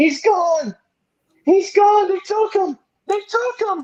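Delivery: shrill, panicked, very high-pitched frantic scream. Telling how the town woke to a woman's cries, imitating a woman screaming. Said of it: "all she's screaming".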